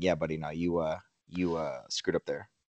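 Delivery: soft, gentle, low, non-aggressive voice.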